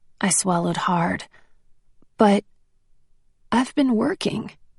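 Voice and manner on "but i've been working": meek, small, timid voice. Narrator answering encouragement not to doubt themself: small voice. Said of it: "I said in a small voice".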